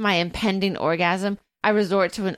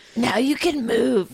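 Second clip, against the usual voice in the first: hushed whispering voice, higher pitch; 3 semitones higher than usual. Reading a romance novel aloud, a line the character says: whispering. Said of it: "he whispers".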